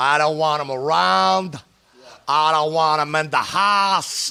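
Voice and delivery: put-on heavy blue-collar Pittsburgh accent. Imitating a friend's father who acted like he hated everybody: Bill Senior's heavy Pittsburgh accent. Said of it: "with this big, big heavy Pittsburgh accent".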